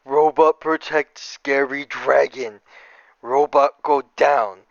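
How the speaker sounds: very slow, plodding monster voice, word by word. Voicing a charging Cyclops speaking about a robot: voicing a Cyclops. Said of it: "and he's like".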